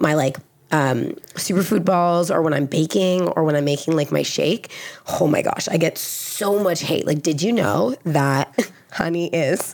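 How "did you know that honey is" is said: put-on valley girl voice. Imitating commenters who message about honey: imitating a Valley Girl. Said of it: "that's what you sound like when you get into my D Ms".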